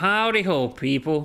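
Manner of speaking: put-on, attempted slow southern drawl accent. Speaker tries out accents while talking about them, attempted southern accent. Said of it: "Something like that".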